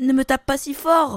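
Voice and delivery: tiny little voice. Narrator reading a tale; an unseen voice speaks to the man with the axe: tiny little voice. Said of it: "il entendit une toute petite voix".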